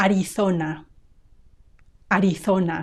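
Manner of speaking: "Arizona" with Castilian Spanish z said as th. A Spanish speaker demonstrates state names in their own accent, Castilian Spanish pronunciation. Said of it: "we say th when there is a z".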